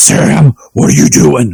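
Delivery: slow, drawn-out gravelly voice. Comparing early and late seasons of a show: gravelly Dean Winchester voice. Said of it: "talking like he's got gravel in his mouth".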